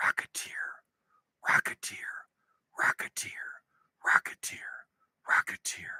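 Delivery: soft, repeated whisper under the breath. Testing whether his mic picks up a word he whispers: whispering. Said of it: "I'm going to whisper a word".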